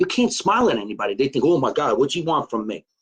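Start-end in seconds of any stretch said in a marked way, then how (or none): none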